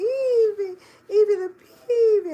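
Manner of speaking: put-on very high, slow, drawn-out baby talk, name stretched. Speaker recalls calling her dog over WhatsApp, high-pitched voice to dog. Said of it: "go into that high pitched voice and go".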